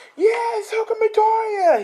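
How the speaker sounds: very high, loud screaming fan cheer.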